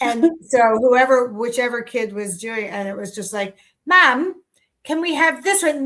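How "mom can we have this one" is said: bad, terrible put-on British accent, pitched up. Speaker retelling a kid asking for cereal while shopping, in a terrible British accent. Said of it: "terrible British accents".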